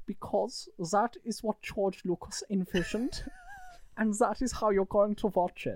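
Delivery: high, sing-song mom voice. Role-playing a mum answering her child's question, imitating a mother. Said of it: "Is that my mum's voice from now".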